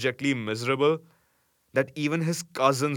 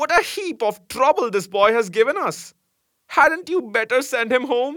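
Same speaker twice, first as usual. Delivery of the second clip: very high, loud, shrill, scornful outburst; 12 semitones higher, 7 dB louder than usual. Narrator reads the wife seeing the boy carried in, exclaiming. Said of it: "She was by no means pleased with this unnecessary addition to her family. / It was anguish to Phatik to be the unwelcome guest in his aunt's house, despised by this elderly woman and slighted on every".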